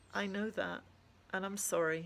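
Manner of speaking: plain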